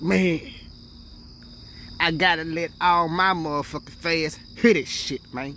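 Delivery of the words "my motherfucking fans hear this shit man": ordinary talk, nothing marked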